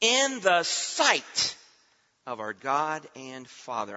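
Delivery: slow, drawn-out stress on "sight".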